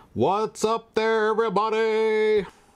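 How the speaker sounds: put-on very high, very slow, drawn-out sportscaster voice. Opening a live stream greeting, joking: put-on sportscaster voice. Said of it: "Like I'm a sportscaster".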